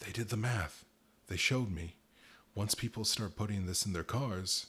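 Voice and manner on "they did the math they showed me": whispering, choked up, strangled. Mr. Titrolley explains what they showed him, in a choked whisper. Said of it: "his voice a choked whisper".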